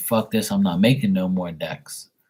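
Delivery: plain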